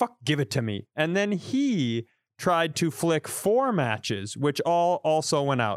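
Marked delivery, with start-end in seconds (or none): 0.0-0.9 put-on condescending, dismissive tone. Retelling how their brother took the matches, imitating Greg's condescending tone. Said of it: "my brother Greg condescendingly went".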